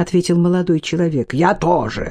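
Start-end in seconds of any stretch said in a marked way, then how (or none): 1.3-2.1 sharp, barked delivery. The old man retorts to the young man: barked. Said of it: "рявкнул человек старый".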